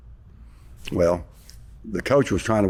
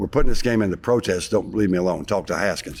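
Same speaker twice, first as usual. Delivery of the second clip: ordinary delivery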